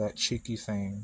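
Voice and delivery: ordinary talk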